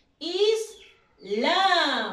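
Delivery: slow, drawn-out islam with final -lam punched loud. Leading a repeat-after-me pronunciation drill: slow Islam, loud final syllable. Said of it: "Primero despacito y luego al final fuerte".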